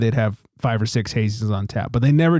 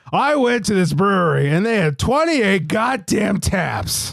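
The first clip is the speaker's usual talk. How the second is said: high-pitched griping complaint; 7 semitones higher than usual. Picturing a caller phoning in to complain: imitating Fontana Jim complaining. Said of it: "I did picture Fontana Jim calling".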